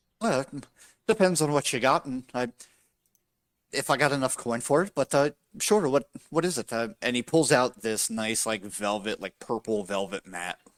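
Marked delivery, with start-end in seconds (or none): 0.2-6.7 happy-go-lucky upbeat halfling voice, higher. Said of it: "a happy-go-lucky, upbeat, halfling".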